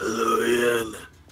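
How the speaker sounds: gruff-sounding. Greeting the others as they join the voice chat: gruff voice. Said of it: "someone's a bit gruff".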